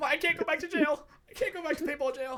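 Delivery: very high-pitched, desperate, put-on pleading voice. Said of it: "yeah, I'm like".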